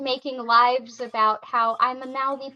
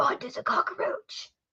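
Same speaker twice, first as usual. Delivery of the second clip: mock quiet mutter under breath, quieter; 2 semitones higher, 6 dB quieter than usual. Retelling what someone said on a stream: imitating someone muttering under his breath. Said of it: "real quietly, under his breath, he said".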